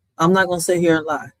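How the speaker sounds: normal talking voice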